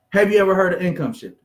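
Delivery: normal talking voice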